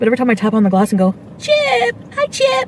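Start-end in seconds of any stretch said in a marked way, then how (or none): 1.4-2.7 odd, very high, squeaky pet-talk voice. Speaker recalling tapping the glass to greet the pet chip, weird pet voice. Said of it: "I have a weird voice for all my animals".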